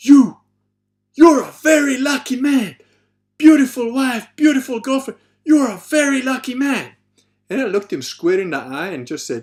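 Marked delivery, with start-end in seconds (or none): 0.0-6.9 shrill, booming, loud, high-pitched shout. Retelling a man on a mountain path calling out: imitating a man shouting. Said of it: "shouted, like".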